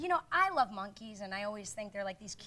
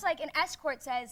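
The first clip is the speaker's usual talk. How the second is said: normal talking voice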